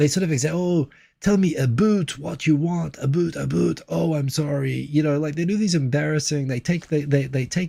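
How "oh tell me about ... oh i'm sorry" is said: cringy, overdone, slow, exaggerated fake Canadian accent. Mimicking how Americans do Canadian accents, exaggerated mock Canadian accent. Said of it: "it's like Americans doing Canadian accents".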